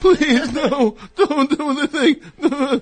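mock fake-crying voice. Imitating the other speaker's fake crying plea: imitating someone's fake crying plea. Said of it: "you went like".

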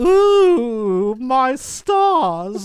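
put-on very high, loud, old-timey camp gasp. Mocking the Quaker Oats man as old-timey: foppish Quaker Oats man voice. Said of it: "he's all very like".

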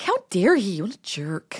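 appalled reaction voice. Retelling own reaction to a rude shout: imitating own appalled reaction. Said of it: "I was, like, really appalled".

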